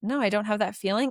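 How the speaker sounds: ordinary delivery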